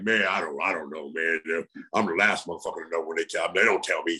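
spot-on voice of a taciturn, terse man. Retelling what Ron said on first meeting: imitating Ron Simmons. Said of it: "you sounded just like him".

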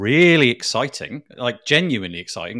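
loud, enthusiastic tone that comes out sarcastic. Introducing the first news item, sounding accidentally sarcastic-sounding. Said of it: "That sounded, like, really sarcastic".

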